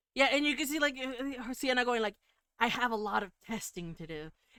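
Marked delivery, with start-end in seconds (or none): 2.6-4.4 put-on, almost evil-sounding voice. Retelling what Sienna says to Wayne about testing: almost evil voice. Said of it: "says that with a weird smile, like, almost, almost evil".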